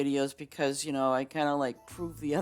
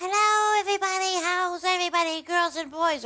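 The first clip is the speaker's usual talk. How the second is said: annoying, piercing, very high-pitched voice; 4 dB louder than usual. Imitating a streamer's greeting: imitating a piercing annoying voice. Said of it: "his voice was piercing".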